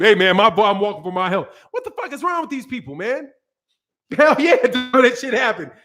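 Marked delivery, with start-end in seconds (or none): 0.0-1.5 voice put on all deep. Speaker retells answering a driver offering a ride, in a put-on deep voice. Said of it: "Got my, my my voice all deep".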